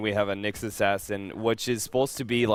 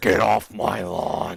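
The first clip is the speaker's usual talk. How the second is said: very slow, loud, raspy voice; 6 dB louder than usual. Joking about a jaded old man: Clint Eastwood voice. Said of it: "It's my Clint Eastwood impersonation".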